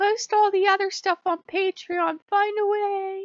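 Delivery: loud high-pitched whining.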